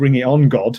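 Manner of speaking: usual speaking voice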